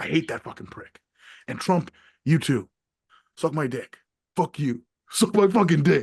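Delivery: pro-wrestling promo style trash talk. Launching into a profane wrestling promo, wrestling promo trash talk. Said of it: "I'm gonna wrestling promo on fucking Elon Musk".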